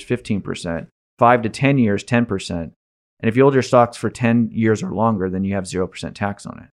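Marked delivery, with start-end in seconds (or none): none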